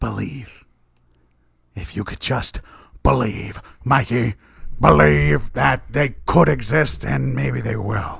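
unusual, strange passionate voice. Urging the other person to believe, in a strange passionate voice. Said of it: "Wrong with your voice".

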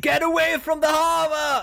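high, shrieking, desperate scream.

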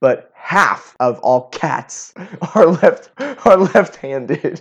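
words spoken while laughing. Sharing trivia about left-handedness, laughing while speaking.

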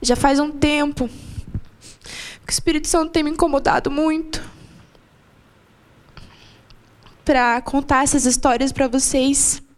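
close to crying, tears coming. Speaker addressing the church gathering, about to cry. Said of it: "Vou chorar já".

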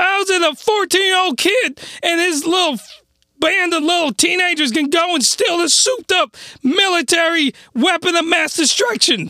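voice cracking. A speaker ranting to listeners about an anime; voice cracking. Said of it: "Voice is just cracking like nobody's business".

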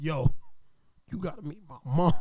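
put-on smitten, hooked boyfriend voice. Acting out the boyfriend urging a friend to meet his mom: imitating the boyfriend. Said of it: "he like".

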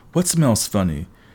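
plain

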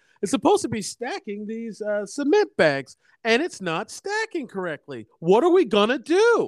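high swooping cartoon voice. Retelling how the woman in the movie said her line: Dora the Explorer voice. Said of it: "she says it just like this".

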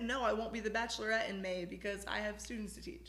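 ordinary talk, nothing marked

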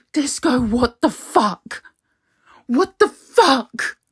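upset, agitated, worked up, distressed. Back from a lesson, confronting whoever sent the learning partner, upset and agitated. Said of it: "Calm down. I don't know why you're upset".

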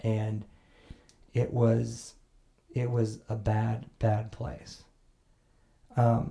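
voice getting choked up. Telling another speaker about a bad time in the past, choked up. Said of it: "You're getting choked up".

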